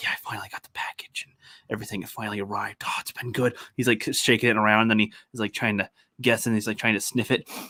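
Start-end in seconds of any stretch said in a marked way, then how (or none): 0.0-3.6 hushed, secretive whispering. Retelling a streamed clip of a guy whispering in a bathroom: imitating a whisper. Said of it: "he's like whispering in a bathroom".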